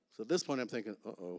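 ordinary talk

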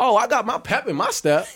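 high-pitched, sarcastic, upbeat boastful show of confidence. Acting out a player walking into the locker room: sarcastic Zach Wilson impression. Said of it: "you giving them a little sarcasm".

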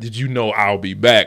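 ordinary delivery

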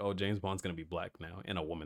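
usual speaking voice

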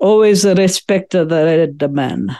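put-on thick, very heavy Italian accent, laid on. Quoting a maternal grandfather while hunting for arrowheads, heavy Italian accent. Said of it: "in his very heavy Italian accent".

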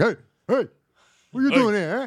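parakeet voice. Acting out a parakeet meeting its reflection in a mirror: voicing a parakeet at a mirror. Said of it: "he'll walk up to be like".

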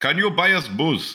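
high-pitched, put-on fake Indian accent. Retelling a dorm party, quoting an eighteen-year-old asking for booze, putting on a fake accent. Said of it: "I'm just kidding, he didn't have an accent".

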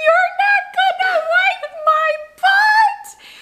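mock shrill, very drawn-out, crying, tearful wail. Retelling how a boy in a bathroom stall yelled, imitating Michael's crying yell. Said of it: "He yells out loud with, like, tears in his eyes".

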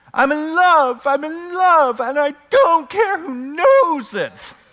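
very high, very loud, belted out. Doing an impression for the congregation to guess: Buddy the Elf impression. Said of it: "I'm gonna take a risk this morning and do an impression".

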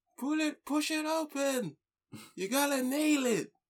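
shrill drawn-out shout. Describing the people at the door, the speaker mimics Daisy: imitating Daisy shouting. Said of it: "The way Daisy was shouting".

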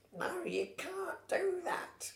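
very high, very slow, drawn-out goofy voice. Retelling how Ghost objected to the bracket seeding: silly voice imitating Ghost. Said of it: "I'm doing a silly voice".

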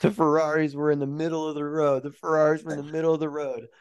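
mock half-shouted radio-style voice, mild yell. Retelling a driver's radio excuse right after his crash: imitating a driver yelling. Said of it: "he's yelling".

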